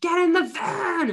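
very high-pitched, very slow, drawn-out yell. Mother retelling how she finally yelled at her daughter, retelling a yell. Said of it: "And eventually I just yelled".

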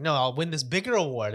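plain

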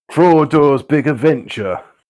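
loud, put-on northern English accent. Joking about titles for a Tolkien story: northern accent. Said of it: "I like how you say it with a northern accent".

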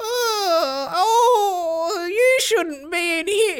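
very high, very drawn-out, slow wailing cry. A game master voices a woman who turns to the player, wailing. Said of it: "She wails a lot".

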